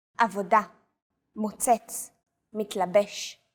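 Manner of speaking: every word with its last syllable stressed. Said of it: "Stress is usually on the last syllable of the word".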